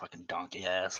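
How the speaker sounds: muttered under the breath. Muttering an insult in character right after apologizing: mumbled under the breath. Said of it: "I mumble on my, um, underneath my skin".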